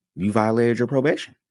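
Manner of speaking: play-acted pleasant, polite, high sweet voice. Retelling being told about a transfer, quoting what she said: imitating her nice voice. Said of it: "also in a nice voice".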